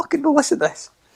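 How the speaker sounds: very high, wide-ranging, squeaky mock rant.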